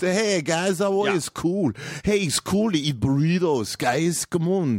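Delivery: vague all-purpose European accent, very high. Asked to do voices from other countries, the speaker does a generic european guy voice. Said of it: "Just general kind of European guy".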